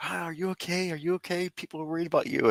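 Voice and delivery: worried, high, tearful pleading. Speaker acts out what they said when the woman opened the door, retelling a tearful plea. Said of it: "I broke down in tears".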